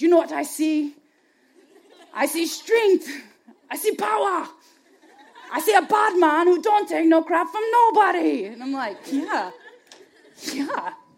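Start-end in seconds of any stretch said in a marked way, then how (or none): 0.0-8.5 bad put-on Jamaican accent, loud and high. Retelling the friend's words in front of the mirror, in the worst Jamaican accent. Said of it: "the worst Jamaican accent I can use".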